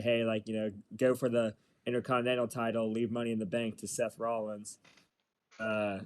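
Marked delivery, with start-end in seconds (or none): none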